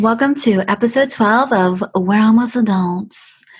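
put-on sultry, seductive voice. Host opening episode 12 of the podcast we're almost adults, in a sultry voice. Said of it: "I have my sultry voice on".

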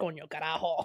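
low, mumbled cursing muttered under the breath. Retelling cursing over taxes: imitating mumbled cursing under the breath. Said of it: "all you mumble under your breath like".

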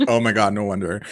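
ordinary talk

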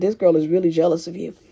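ordinary talk, nothing marked

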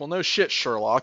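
ordinary talk

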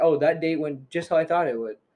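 ordinary talk, nothing marked

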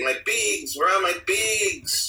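put-on high-pitched voice with an Italian accent. Retelling an effects artist's memory of a line on set, in Damiano's Italian accent. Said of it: "his Italian accent saying".

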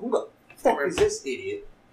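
put-on irritated, slow, angry, annoyed outburst. Retelling a driver who took both handicap spots: retelling an audible angry remark. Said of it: "audibly go".

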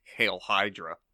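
mock-sarcastic tone. Recapping a scene where he walks out after everyone is unconscious; retelling a sarcastic line. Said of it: "He walks out and just like so sarcastically".

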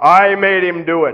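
mock big booming voice, slow and drawn out. Retelling a traffic stop, the passenger calling from across the car: Yogi Bhajan's booming voice. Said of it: "this booming voice".

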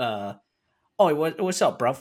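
exaggerated South London accent. Describing an actor's real accent, imitating how he talks: stereotypical south london accent. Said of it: "he's got like the stereotypical".

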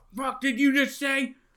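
play-acted, furious, high-pitched angry yell. Retelling being insulted while walking home, imitating own angry yelling. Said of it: "I was angry".

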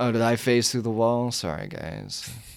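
mock, soft, drained, listless low-energy voice. Speaker pitches a casting idea and acts out Vision, low-energy voice. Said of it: "Just a really low energy vision".

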